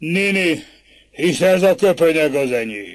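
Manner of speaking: thundering, booming voice. Narrator reads one man's line as he seizes another, in a thundering voice. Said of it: "mondta egyik mennydörgő hangon".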